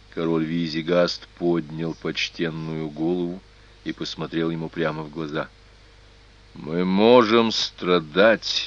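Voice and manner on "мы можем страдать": firm, resolute, steady, unwavering voice. An old king looks a man straight in the eye, answering firmly. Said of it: "твердо произнес он".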